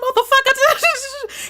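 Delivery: mock very high, all-out shriek. Retelling a phone argument with a man, imitating own past yell. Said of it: "I was screaming on the phone".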